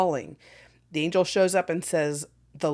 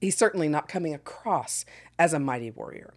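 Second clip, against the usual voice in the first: ordinary talk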